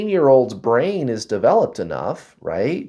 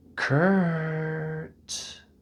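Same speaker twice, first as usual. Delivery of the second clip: gentle, reassuring, beautiful soft high female voice, drawn out; 5 semitones higher, 8 dB quieter than usual. Retelling hearing a voice say his name, imitating a soft reassuring female voice. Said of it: "very beautiful, soft, and reassuring female voice".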